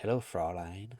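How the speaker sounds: creepy, smarmy, dweeby villain voice with slight menace. Retelling a side villain's first line to a woman: imitating smarmy villain's accent. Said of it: "and he's just like".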